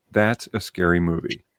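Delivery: solemn, grave, dead-serious delivery. Retelling what dad said after the movie: imitating dad, dead serious. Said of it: "My dad looked at me dead serious".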